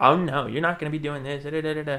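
showy, fabulous twang, muttered. Retelling a stranger who walked up talking to himself: imitating a fabulous twang. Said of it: "that fabulous twang".

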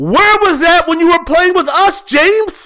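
very high, loud, raging furious scream. Imitating Houston Rocket fans yelling at the television: imitating fans screaming. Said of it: "screaming at the top of their lungs".

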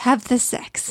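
put-on mutter under the breath. Retelling finding Tech Deck crouched over zucchini flowers: imitating Tech Deck muttering under his breath. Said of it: "muttering to himself under his breath".

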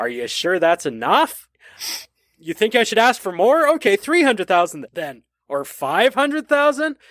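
put-on sarcastic voice. Retelling a movie scene with a Western Union clerk: imitating a sarcastic clerk. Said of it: "sarcastic delivery from the Western Union woman".

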